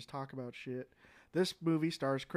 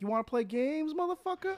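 very high, taunting voice, flung up; 13 semitones higher than usual. Joking what a Saw movie line would sound like: Samuel L. Jackson impression. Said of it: "Samuel L. Jackson just do a Saw movie and be like".

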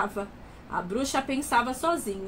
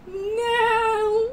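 long, high, drawn-out shout; 9 semitones higher, 4 dB louder than usual. The witch faces a fire-breathing dragon that wants to eat her: shouted. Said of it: "A bruxa gritou".

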